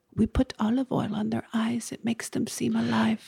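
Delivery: odd, vague put-on European accent, soft and slow. A speaker quotes some odd people's answer, in a weird European accent. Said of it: "You've given them like a weird European accent".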